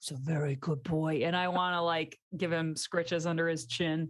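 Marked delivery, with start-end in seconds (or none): 0.0-1.2 hushed whisper, lower and slower. Going up to him to give him scritches under his chin, whispering. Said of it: "I'm kind of like whispering to him".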